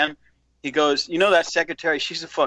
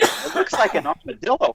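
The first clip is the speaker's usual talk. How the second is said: high voice, barely holding back laughter; 8 semitones higher than usual. Retelling his reply to the owner about the copier, retelling holding back laughter. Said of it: "And I'm trying not to laugh".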